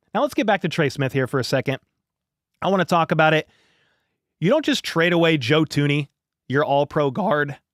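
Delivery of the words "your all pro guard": voice cracking and breaking mid-line. Speaker talking about a traded all-pro guard he misses, voice cracking. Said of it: "My voice just cracked".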